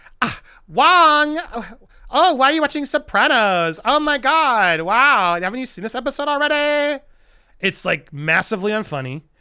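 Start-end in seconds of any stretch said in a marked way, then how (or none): 0.2-7.0 put-on high, loud, tipsy, drunk girl voice. Recapping a show scene, acting out a random girl barging in, imitating a drunk girl. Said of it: "I'm talking like this".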